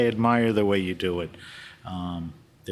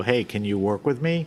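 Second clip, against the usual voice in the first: ordinary talk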